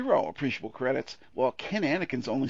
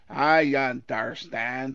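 put-on disgusted drawl, louder; 6 dB louder than usual. Joking that viewers will go around saying the line: disgusted John Wayne impression. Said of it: "disgustedly saying".

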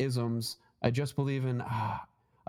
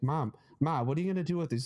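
put-on, thick Boston accent. Retelling a story about a man whose mom is a hoarder, imitating Bobby's thick Boston accent. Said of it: "he's got a really thick Boston accent".

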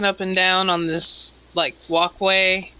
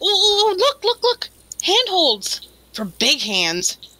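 put-on tiny childlike fairy voice, much higher; 11 semitones higher than usual. On spotting the handholds, the speaker's character remarks: tiny childlike fairy voice. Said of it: "A tiny fairy, / Just like a child would. / [name]'s going to make a lasso out of her rope".

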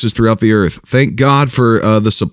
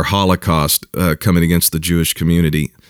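plain

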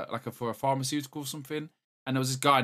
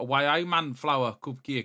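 put-on effortful Newcastle Geordie accent. Comparing English regional accents, demonstrating the Newcastle accent. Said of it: "a lot of effort in the Newcastle accent".

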